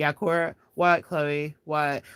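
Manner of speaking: mock bored, slow, flat, tuned-out monotone drone. Retelling a parody of sisters scrolling their phones: imitating a banal monotone Kardashian parody. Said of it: "banal as possible with a monotone voice".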